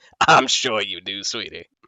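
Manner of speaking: creepy archdevil voice. The speaker voices the Archdevil Zariel answering Gilda: creepy Zariel voice. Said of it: "everything about this woman is creepy as hell".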